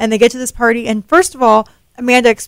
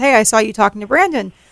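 ordinary talk

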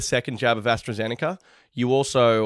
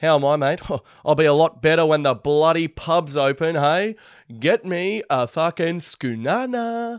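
Sydney bloke voice, pitched up; 5 semitones higher than usual. Retelling what a bloke keeps saying to him: imitating a pub-obsessed bloke. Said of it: "this pelican Tomo who just feels the need to say it. He goes".

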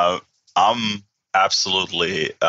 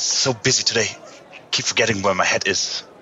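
quiet mumbling to oneself; 2 semitones higher than usual. A player's character stops and slaps his forehead, mumbling to himself. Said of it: "I slap my forehead and mumble".

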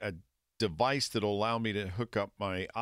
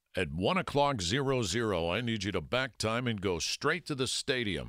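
bossy, take-charge commanding tone. Retelling the big boss giving an order: imitating a boss's deep voice. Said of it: "he had a really deep voice".

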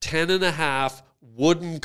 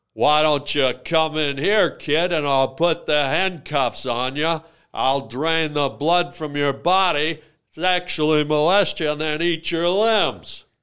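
put-on cowboy voice. Mixing up a cowboy and a serial killer as a joke: joke John Wayne voice. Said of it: "That's the famous cowboy, John Wayne Gacy".

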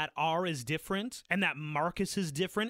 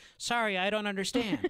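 put-on voice assistant voice; 3 semitones higher than usual. Retelling a movie blooper where a phone answers: imitating Siri. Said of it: "Siri pipes up and is like".

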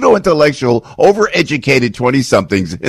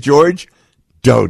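ordinary delivery

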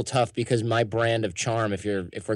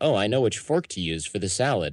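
usual speaking voice

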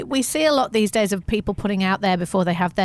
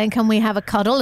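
ordinary delivery

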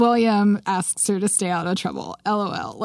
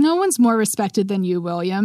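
ordinary delivery

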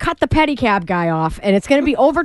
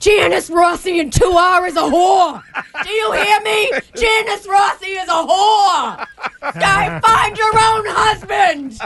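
put-on high-pitched yelling, ranting tirade; 8 semitones higher than usual. [name], prompted by a texter, impersonates Karen from Goodfellas yelling. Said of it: "impersonate Karen when she was yelling".

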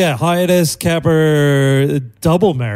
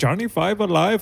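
full, exaggerated Indian accent, softly spoken; 3 semitones higher, 7 dB quieter than usual. Quoting Fisher Stevens' Indian character, in his full wobble-headed accent. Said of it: "he's full wobble-headed accent".

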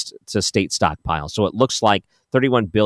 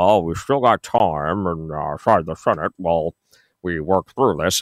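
low-pitched Kentucky drawl; 4 semitones lower than usual. Quoting a senator on AM radio in a Mitch McConnell impression. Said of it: "some of my blemishes in that impersonation".

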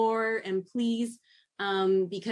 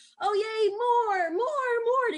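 put-on very high, slow, drawn-out, delighted, excited baby talk; 13 semitones higher than usual. Showing how you repeat a child's words back to them, really excited. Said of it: "you get really excited about the words".

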